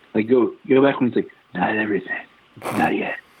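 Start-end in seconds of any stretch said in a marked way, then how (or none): 1.5-3.1 talking with mouth open, no air through nose. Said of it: "he can't close his mouth or breathe through his nose".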